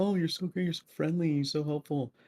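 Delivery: weird put-on gushing voice. Imitating teammates who praise the speaker: weird voice imitating teammates. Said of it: "That was just a weird voice".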